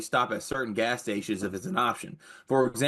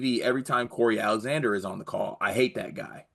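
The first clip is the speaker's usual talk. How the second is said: ordinary talk, nothing marked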